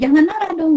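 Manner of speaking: high, loud scolding tone. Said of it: "Kalau misalnya kita bilang".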